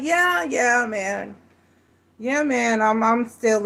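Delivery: slow, worn-out, deflating voice with sagging energy. Retelling a guy's answer about still being with that chick: imitating his energy declining. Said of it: "his energy was on the decline".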